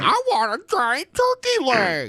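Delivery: put-on very high, swooping, whining spoiled child voice. Mocking another speaker's demand for a turkey leg: imitating a whiny kid. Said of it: "you sound like a whiny kid".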